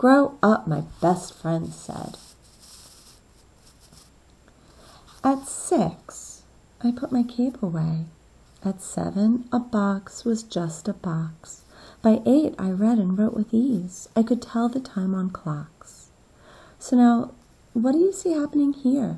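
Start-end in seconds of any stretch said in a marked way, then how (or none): 0.0-16.1 slow, gentle, slightly wistful reading. Reading a story passage aloud to show its tone, a little wistful. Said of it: "the way that I just read it? Kind of a little wistful".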